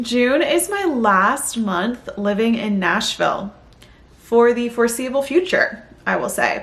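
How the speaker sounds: teary, on the verge of crying. Vlogger sharing news in the middle of a video, close to tears. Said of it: "why do I feel like I'm gonna cry?".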